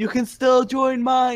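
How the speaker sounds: high, called-out shout. A character calls out from the crowd; yelling from the crowd. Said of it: "I'm gonna yell".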